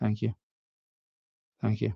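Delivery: soft, muted mumble under the breath. Imitating young people passing through a held door: imitating a muted thank you. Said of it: "sort of muted".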